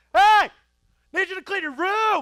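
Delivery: very high, very loud, shrill yelling. A dad acts out calling to his kids an hour later, retelling a yell. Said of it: "why are you yelling?".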